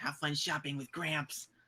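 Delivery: hushed muttered whisper under breath. Playing a character leaning over to another character in a roleplay, whispered under breath. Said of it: "whisper under my breath".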